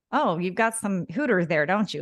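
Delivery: snide, sarcastic voice. Retelling comments from customers at work: imitating a sarcastic customer.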